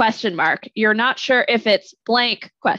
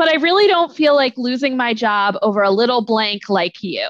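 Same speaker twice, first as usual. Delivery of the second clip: ordinary talk, nothing marked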